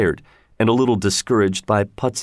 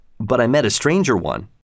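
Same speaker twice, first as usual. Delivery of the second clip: ordinary delivery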